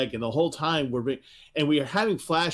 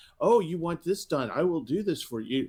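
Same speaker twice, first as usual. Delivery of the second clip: mock gushing voice, higher; 4 semitones higher than usual. Retelling a battle maid who gushes over a boy: imitating a gushing battle maid. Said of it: "She just gushes over this kid".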